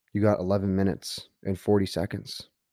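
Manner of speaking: ordinary talk, nothing marked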